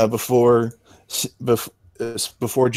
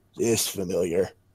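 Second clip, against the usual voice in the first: goblin mutter, lower and quieter; 4 semitones lower, 6 dB quieter than usual. A game master voicing a goblin eyeing the player's rifle, goblin muttering. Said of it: "he kind of mutters loud enough for you to hear".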